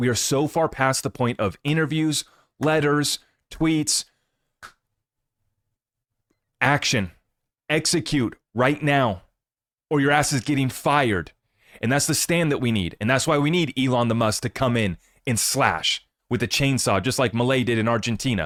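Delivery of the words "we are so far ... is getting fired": exasperated, frustrated, fed-up rant. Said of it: "if you can hear the frustration in my voice".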